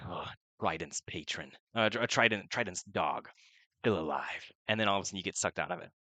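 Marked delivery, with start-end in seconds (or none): 0.1-4.5 deep, dark, rumbling low voice. Voicing a voice heard through a pearl: deep dark voice. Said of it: "a deep voice saying".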